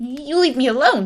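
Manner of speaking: loud, high, squeaky goblin voice, frightened. Reading a story aloud, the little goblin answers the candle-lighter: squeaking. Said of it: "he squeaked".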